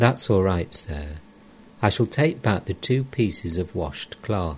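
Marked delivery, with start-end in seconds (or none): none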